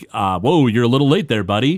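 put-on sarcastic man's character voice. Speaker retells a show scene with a gas station attendant, sarcastic guy voice. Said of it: "we hear the sarcastic guy's voice".

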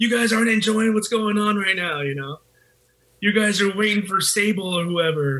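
put-on acted drunk yelling. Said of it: "I started yelling at the crowd around me".

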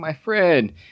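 mock weeping, words spoken through tears, crying voice. Retelling a movie scene where Ray cries: imitating Ray crying. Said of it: "you see Ray and he's crying".

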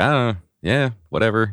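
high-pitched, offhand, tossed-off nonchalance. Showing a comedian's attitude toward his comedy: Mark Norman impression. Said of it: "he's just like".

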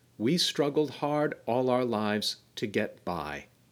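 ordinary delivery

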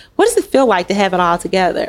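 ordinary talk, nothing marked

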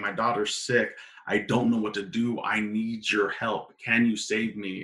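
put-on crying, mock tearful pleading tone. Retelling how a woman came to Jesus for help, imitating a crying woman. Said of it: "a woman crying".

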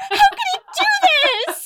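very high, shrill, tearful sobbing yell. Retelling reading a betrayal in a book at thirteen: imitating own past sobbing yell. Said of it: "just yelling".

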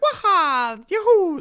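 very high, squeaky Italian cartoon cry, waha stretched out. Chatting about Italian-American accents, then doing a Mario voice. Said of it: "when Mario's voice is like".

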